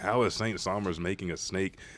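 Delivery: ordinary delivery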